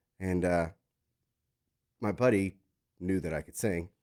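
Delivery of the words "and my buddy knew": usual speaking voice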